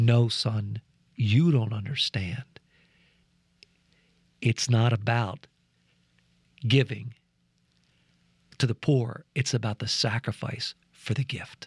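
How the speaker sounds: still, low voice. Retelling Father George's reply to him, speak in his still, quiet voice. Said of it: "in his still, quiet voice".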